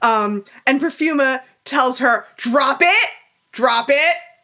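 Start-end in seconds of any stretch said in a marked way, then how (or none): 2.4-4.2 mock firm, stern dog-training style tone. Acting out a line on request, telling someone to drop it: Perfuma telling a dog to drop it. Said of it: "the way you tell your dog to drop".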